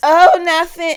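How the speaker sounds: voice cracking, very high and very loud. Podcast host greets listeners at the start of the episode, voice cracking. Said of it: "Why did my voice crack?".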